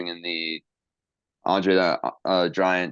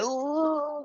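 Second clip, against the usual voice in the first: very high, mocking put-on voice. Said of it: "the smart marks will yell at me and say".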